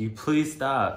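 mock high, loud yell full of pain. Retelling a painful encounter, re-enacting her own yell at the time. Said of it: "I'm like literally like just yelling".

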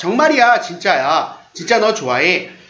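ordinary talk, nothing marked

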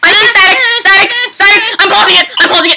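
high, fast, frightened, panicked shouting. Playing a scary game and spotting static on screen: scared panicked shouting. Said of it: "I am horribly scared right now".

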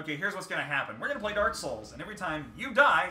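ordinary talk, nothing marked

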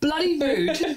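very high-pitched, fake put-on English accent. Quoting a Scottish woman's remark to annoy her, in a put-on English accent. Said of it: "I'm going to put her in English accent".

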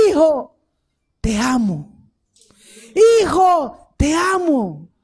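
slow voice, heavy with pain. Preacher telling the congregation a father's words to his son, pained voice. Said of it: "con voz de dolor".

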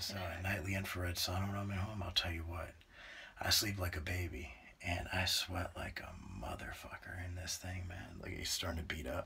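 soft, low, very quiet near-whisper. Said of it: "This is the most quiet you've ever talked in your life".

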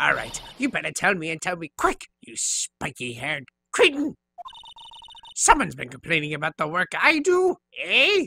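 put-on strained raspy elderly voice. Voicing an old lady character in a game playthrough, in a raspy old lady voice. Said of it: "and it's a crying shame that you use today to say what you please about poor old ladies. ... But her voice is the reason I, right now, am raspy. I am now allowing all of the stress from this recording to hit my voice because I no longer need it. And it is almost entirely from that bitch".

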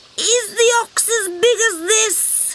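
odd, high, strained, swollen, puffed-up, hard-to-speak voice. Narrator reads Mum frog, blown up like a beach ball, odd hard-to-speak puffed-up voice. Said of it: "She sounded odd, because it's hard to speak, blown up like a beach ball".

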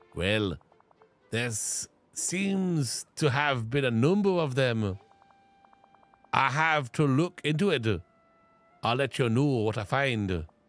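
put-on Scottish-accented voice. As a character answering a question about the machines, in a Scottish accent. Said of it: "I really Scottished it up a little bit".

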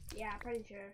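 very soft whisper. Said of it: "Why are we whispering again?".

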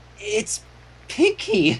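slow, high, shocked fear. A narrator reads a character's line on a discovery: slow, shocked and fearful. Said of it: "Twilight slowly said, becoming consumed by shock and fear".

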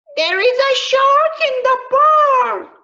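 loudest shout, shrill and very high. Reading a story aloud to show how to engage children: loudest voice. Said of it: "In his loudest voice, Timothy cries".

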